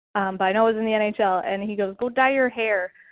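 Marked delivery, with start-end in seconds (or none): 2.0-2.9 bad, horrendous, put-on Canadian accent. Quoting a hockey player's clip, the speaker uses a horrendous Canadian accent. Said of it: "that's my horrendous Canadian accent".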